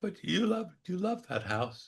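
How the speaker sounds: tiny, shrunken, very high little voice. Describing a moment from a show, quoting Anson in Anson's little voice. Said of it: "he says in his little voice".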